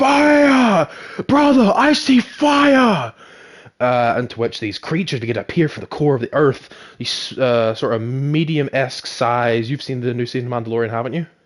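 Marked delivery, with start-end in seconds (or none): 0.0-3.1 mock-screaming, much higher, louder, slower. Recounting a man peering down a waterfall, retelling a scream. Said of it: "he screams".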